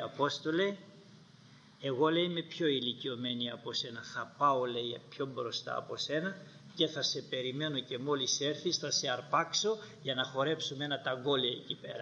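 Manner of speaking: ordinary talk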